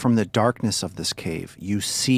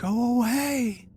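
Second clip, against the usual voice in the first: very high, sobbing cry, shouted. A narrator voices the last thing a woman up in a cave shouted, sobbing. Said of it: "And she's sobbing".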